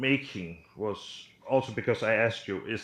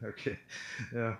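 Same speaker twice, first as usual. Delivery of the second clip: words broken up by laughing throughout; 7 dB quieter than usual. Reacting to a story about a furniture-stealing genie, laughing while talking. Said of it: "Why are you laughing?".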